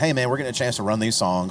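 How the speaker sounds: usual speaking voice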